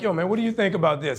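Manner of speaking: ordinary talk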